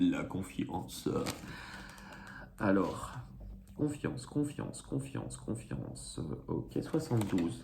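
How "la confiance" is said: big, thick, deep, velvet-smooth voice. Card reader announcing the word for choice three, big velvety voice. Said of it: "je prends une sorte de grosse voix de velours".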